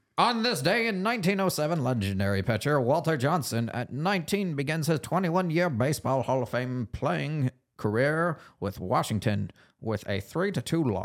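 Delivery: put-on vintage, old-timey ballpark announcer voice. Reading a this-day-in-history segment: old-timey announcer voice. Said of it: "you got to do the old-timey announcer voice".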